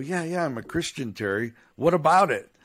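nervous, guarded, cagey, wary delivery. Retelling a nervous answer to a friend's question: imitating own quiet reply. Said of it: "I kinda quietly go".

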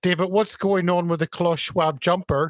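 usual speaking voice

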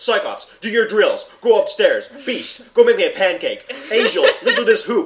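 loud, high-pitched, barked, commanding yelling. Retelling how a comics professor orders his students around: imitating Professor X yelling. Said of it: "He's yelling at everybody all the time".

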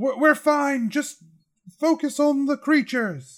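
high-pitched, hollered yell. Voicing a character crossing spikes, calling out to the group: yelling. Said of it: "Evan yells out".

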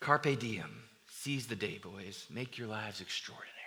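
low, hushed, inspiring teacher voice.

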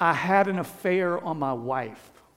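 slow, tearful, blubbering, sobbing voice. Retelling a man's words as he sat bawling: imitating someone sobbing. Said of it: "bawling like a baby".

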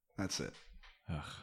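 ordinary delivery

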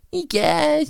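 very high-pitched, nasal voice. Describing how a cartoon voice changed over time: Cartman's higher pitched nasally voice. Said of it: "the higher pitched nasally voice".

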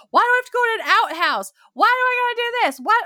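acted furious, shrill tone, very high and loud. Describing how a woman reacts to a man's family, imitating her angry complaining. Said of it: "she's just so angry".

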